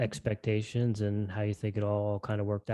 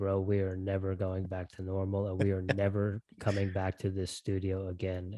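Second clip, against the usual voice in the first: dry, flat, expressionless deadpan delivery. Recounting a remark to a companion while leaving the radio station; retelling a deadpan line. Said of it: "I just turned to him deadpan and said".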